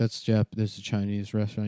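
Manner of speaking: ordinary talk, nothing marked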